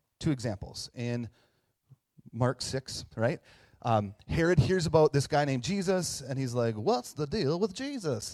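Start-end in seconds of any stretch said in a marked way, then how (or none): 6.8-8.4 high, comic, pitch swooping up and around. Retelling Herod asking about Jesus, in a Seinfeld impersonation.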